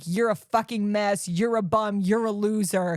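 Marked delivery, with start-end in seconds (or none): none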